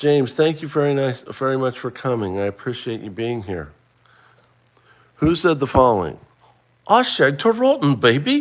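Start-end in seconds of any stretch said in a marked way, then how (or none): 6.9-8.4 very high-pitched, slow, drawn-out, bad British accent. Quizzing listeners on who said a quote, doing a bad Austin Powers British accent. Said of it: "I don't do a British accent very well".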